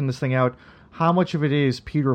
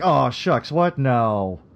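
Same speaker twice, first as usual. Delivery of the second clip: put-on humble, aw-shucks voice. Retelling a scene from the show, imitating Falk's humble aw-shucks Columbo. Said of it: "Falk does this really, really great sort of like".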